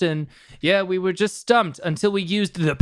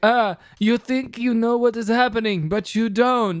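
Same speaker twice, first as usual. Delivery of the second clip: put-on vague German accent; 4 semitones higher than usual. Retelling a villain's line from the movie ending in a vaguely German accent. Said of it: "Jon Voight's putting on a weird accent".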